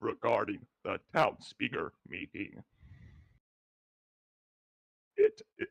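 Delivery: voice breaking and cracking mid-line. Reading the bird's next line aloud, struggling to word it: voice cracking. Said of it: "my voice cracked".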